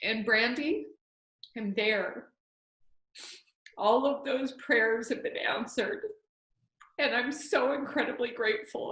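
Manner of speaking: emotional, choked voice. Speaking to brandy about prayers being answered, getting emotional: choked up. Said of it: "I'm sorry I'm getting so emotional".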